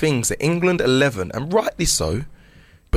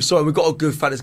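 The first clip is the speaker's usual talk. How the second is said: ordinary talk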